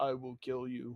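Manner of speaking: deep, dark, low, soft voice. Recalling an actor's line from many movies and TV shows, deep voice. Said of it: "that deep voice going".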